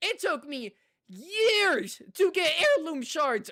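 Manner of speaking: loud voice crack, breaking upward mid-phrase. Talking about grinding for heirloom shards in a game, with a voice crack. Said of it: "holy voice crack!".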